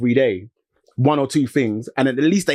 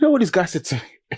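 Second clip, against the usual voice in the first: usual speaking voice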